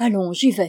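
spoken on a sigh. Narrator reads a woman agreeing to go at once: sighing. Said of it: "soupira Pélagie".

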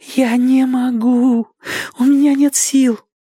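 breathless gasps, very high and very slow. Reading a story, she answers the man urging her across the moat, gasping for breath. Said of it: "проговорила она, задыхаясь".

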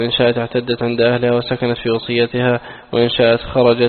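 plain

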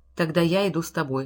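ordinary delivery

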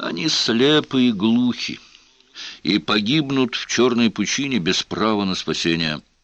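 ordinary delivery

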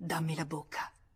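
ordinary delivery

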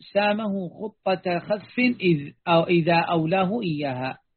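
ordinary talk

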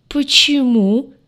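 loud, high speech choked with laughter. A listener cuts into the other's account, squeezed out through laughter. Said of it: "выдавил сквозь хохот Лаен".

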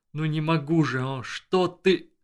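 groaning, pained, broken moan. Narrator voicing a man doubled over in weakness, moaning. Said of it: "простонал он".

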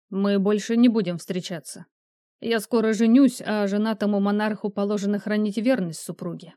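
plain reading voice

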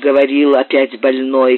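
plain

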